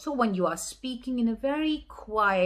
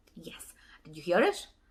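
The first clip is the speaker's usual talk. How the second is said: usual speaking voice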